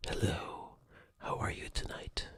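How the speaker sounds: soft intimate voice. Showing how the sensitive microphone sounds up close: talking very softly, intimate. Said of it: "I have to start talking very softly".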